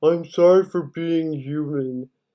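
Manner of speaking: slow, soft, passive-aggressive, annoyed mocking tone.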